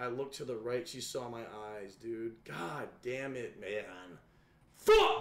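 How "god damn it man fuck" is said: furious outburst, very drawn out, slow and swooping. Reacting after being caught in a game, angry outburst. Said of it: "Why you so mad?".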